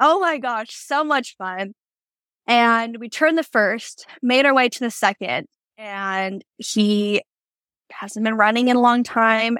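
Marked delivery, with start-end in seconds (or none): 0.0-1.7 happy, gleeful, light whooping of delight. Retelling own shouts during a fast barrel race run: imitating own hooting and hollering. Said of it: "you can hear me hooting and hollering".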